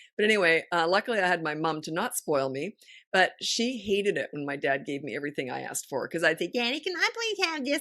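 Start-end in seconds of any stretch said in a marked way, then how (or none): 6.5-7.8 very high, put-on little-kid voice. Retelling how she used to ask her father for things, imitating her childhood self asking dad. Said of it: "I use this voice".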